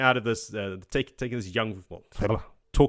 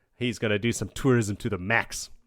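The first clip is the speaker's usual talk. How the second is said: ordinary talk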